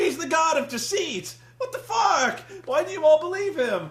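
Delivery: high, loud, exasperated, incredulous yell. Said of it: "and I'm like".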